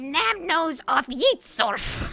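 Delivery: drawn-out demonic screeching, very high and loud. Voicing a big gremlin flapping above the players: demonic gremlin screeching. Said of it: "demonic screeching".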